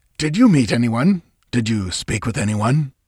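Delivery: sharp, pointed delivery. A man presses the narrator about whom they met, sharp. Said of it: "Then he added sharply".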